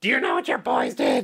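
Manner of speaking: very high, badly done mother voice. Retelling his mom calling Dad about the boys: terrible impression of Mom. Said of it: "that's a terrible impression of my mom".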